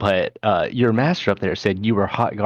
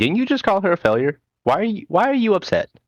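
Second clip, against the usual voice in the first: very high, needling, goading taunting tone; 11 semitones higher than usual. Voicing a character taunting another after an insult: antagonizing. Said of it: "Riaz wants to antagonize him".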